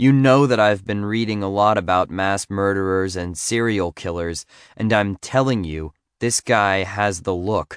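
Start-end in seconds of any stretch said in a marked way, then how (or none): none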